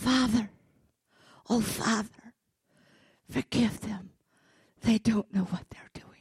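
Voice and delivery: gentle, tender, loving, compassionate pleading tone. Retelling Jesus forgiving the crowd: voicing Jesus with love and compassion. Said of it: "love and compassion, not yelling".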